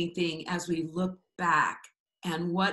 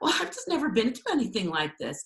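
put-on giggly speech, mock giggling; 4 semitones higher than usual. Retelling what someone said to the speaker early on, imitating giggly speech. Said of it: "she sort of giggly said to me".

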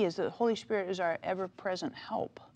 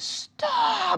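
put-on high, loud four-year-old child's yell. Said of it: "he yells and he says".

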